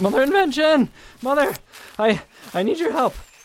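in a panic. A character arrives calling out to Mother for help: panicking. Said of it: "I'm panicking again".

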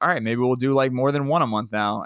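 normal talking voice

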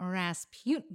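sultry, sexy, seductive delivery. Announcing the episode topic, then remarking on it: sultry, sexy delivery. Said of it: "did you hear how, like, sexual that was".

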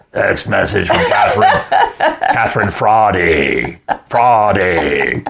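swooping, drawn-out evil robot voice. Imitating the new phone assistant reading a text alert: Borg-like evil robot voice. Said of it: "this evil robot voice".

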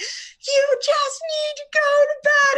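very high, very loud shrieking scream. A mother retells losing it when her son won't nap: retelling a scream. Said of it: "like screaming".

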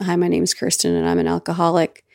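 light stage whisper. Retelling introducing oneself at a meeting: reenacting a past whisper. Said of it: "I essentially whispered".

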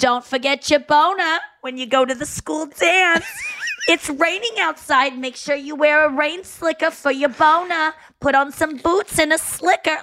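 fussing, fretful, nagging motherly voice.

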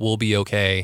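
ordinary talk, nothing marked

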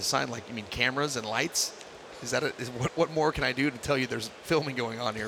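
ordinary talk, nothing marked

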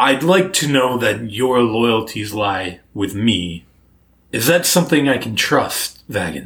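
relaxed, easygoing, ancient orc god voice. The ruling orc deity asks his paladin where his loyalties lie, in an old orc god character voice. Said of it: "That is the ruling deity of the Orklands. / And he sort of seems to be just like relaxing after he's done hosting this dinner. / but it helps an old orc be more reassured. / I was the one that made yo".

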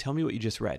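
ordinary delivery

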